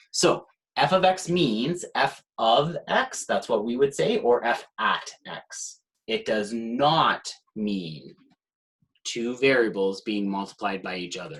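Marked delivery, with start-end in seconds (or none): 6.0-11.4 strong, hard stress on "not". Explaining what f of x notation means: stress on not. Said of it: "Stressing the word not".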